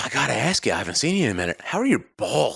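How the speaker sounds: bold, brash, unfiltered, asked right out. Retelling what a bartender asked across the bar, imitating a full-volume question. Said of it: "Just full volume".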